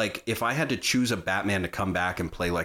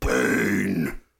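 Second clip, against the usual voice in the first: put-on grunting superhero voice, louder; 5 dB louder than usual. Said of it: "just grunting like a fucking pig".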